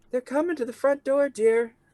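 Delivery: very high, put-on housewife voice. Voicing a housewife at a window, calling inside: housewife voice. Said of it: "housewife voice again".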